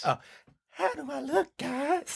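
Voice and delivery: very high, dainty put-on lady voice. Trying on a dress in character and asking the others, lady voice. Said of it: "try on a lady voice".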